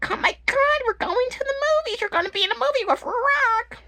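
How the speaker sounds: very high, gushing put-on motherly voice. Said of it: "That's how she talks".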